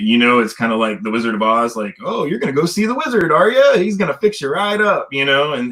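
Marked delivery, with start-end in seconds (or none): 2.0-5.1 very high, swooping, sing-song sarcastic mockery, acted out. Imitating what service members say about getting help: imitating a sarcastic taunt. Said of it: "it's real sarcastic".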